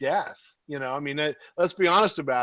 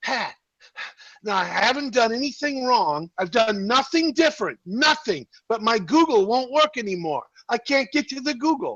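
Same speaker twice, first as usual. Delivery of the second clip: frantic, panicked, high-pitched voice; 8 semitones higher, 3 dB louder than usual. Retelling a mother's morning panic calls: imitating a panicked mom. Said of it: "I'll get a panic call".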